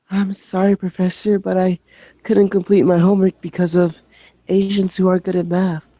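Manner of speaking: put-on timid child voice. Reading an excuse to a professor about missed homework in a shy kid voice. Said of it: "let me get into my uh, shy kid voice".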